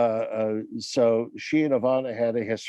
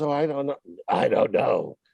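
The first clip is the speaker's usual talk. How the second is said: put-on low, little gravelly female voice; 2 semitones higher than usual. Retell her answer about when the new studio opens, in Ivana's low, kind of gravelly voice. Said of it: "Ivana kind of talks like this".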